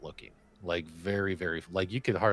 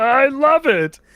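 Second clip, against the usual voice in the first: mock scream, higher and louder; 15 dB louder than usual. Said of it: "screaming at the camera going".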